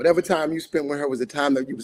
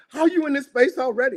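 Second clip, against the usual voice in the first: put-on angry voice, higher pitch; 10 semitones higher than usual. Retelling what they said to a friend's tribute post: retelling own angry words. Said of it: "I'm angry 'cause I'm like".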